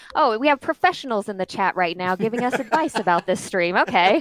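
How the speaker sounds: mock sarcastic, professional-sounding tone. Retelling how the stream chat reacted: imitating sarcastic chat. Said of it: "professional sarcastic".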